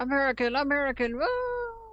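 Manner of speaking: mock cheering tone.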